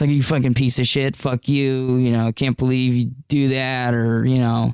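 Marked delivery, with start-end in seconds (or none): 0.1-3.9 put-on drunken mumbling. Retelling what a drunk partygoer shouted at the speaker: imitating drunk mumbling. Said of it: "drunk mumbles".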